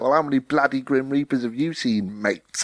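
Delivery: squeaky little comic voice. Describing a funny show, quoting the Grim Reaper's comeback in a squeaky Grim Reaper voice. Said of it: "he's got a really squeaky voice".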